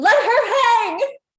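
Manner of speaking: shrill, very high, very loud shriek. Narrating a mob scene, a woman in the crowd calls out: woman screaming. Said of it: "you hear another woman's voice scream".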